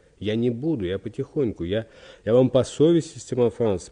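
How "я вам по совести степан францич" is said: ordinary delivery, nothing marked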